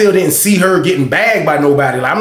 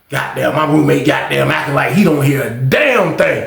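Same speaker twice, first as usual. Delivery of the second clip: ordinary delivery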